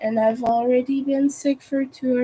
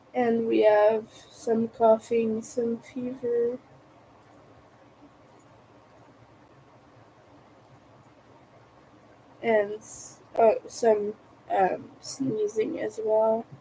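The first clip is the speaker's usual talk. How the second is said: slightly broken, sick-sounding voice, quieter; 3 dB quieter than usual. Sick host listing symptoms to viewers, slightly broken voice. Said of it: "my voice is a bit broken".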